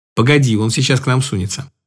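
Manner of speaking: usual speaking voice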